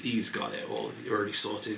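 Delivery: normal talking voice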